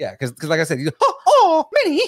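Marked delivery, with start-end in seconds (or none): 1.0-2.0 put-on regular cartoon mouse voice. Showing how a regular version of the character sounds: regular Mickey Mouse voice. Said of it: "I can do a regular Mickey".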